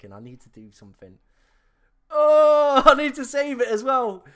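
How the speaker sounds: very high, very loud, rising panic. Racing a deadline to make a transfer decision: panicking. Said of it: "I'm panicking. I'm actually panicking".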